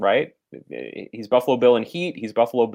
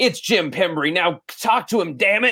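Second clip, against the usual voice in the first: bad Southern accent, pitched up high; 7 semitones higher than usual. Retelling a line from a bad movie performance: Sergeant Tate's bad Southern accent. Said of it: "he has this really bad Southern accent".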